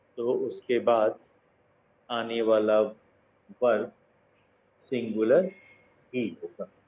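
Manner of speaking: dictating, paced so listeners can write along.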